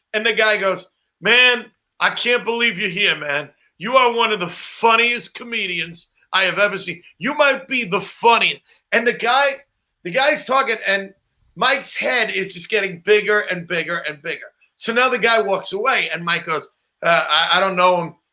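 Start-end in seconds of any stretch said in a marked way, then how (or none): none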